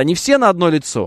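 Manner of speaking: usual speaking voice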